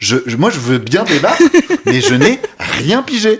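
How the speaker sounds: flustered, stunned stammering, very high and swooping pitch. Retelling a TV debate moment, imitating Louis Boyard stunned and stammering. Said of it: "qu'il est là en mode".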